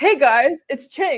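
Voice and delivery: put-on older adult voice, mocking imitation. Retelling a presidential run's boomer TikTok intro: imitating Cenk's TikTok. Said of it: "he'd be like".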